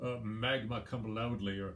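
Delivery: ordinary delivery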